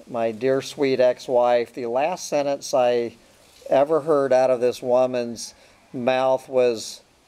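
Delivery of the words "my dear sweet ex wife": ordinary talk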